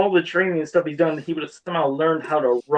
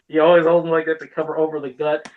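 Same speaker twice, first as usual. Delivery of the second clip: ordinary talk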